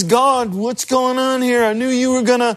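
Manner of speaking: put-on grumpy, grouchy grumbling like an old grouch. Speaker retells Jonah's words to God, as a grumpy old grouch. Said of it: "he sounds like an old grouch".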